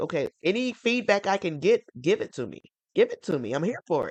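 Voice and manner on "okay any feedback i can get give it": plain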